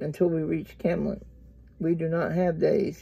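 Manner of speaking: ordinary delivery, nothing marked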